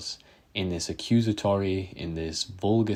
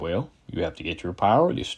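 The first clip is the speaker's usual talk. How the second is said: bad, poorly done Kentucky accent. Imitating a channel's speaker giving advice: bad Dry Creek Wrangler School impression. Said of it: "that was a very bad impression".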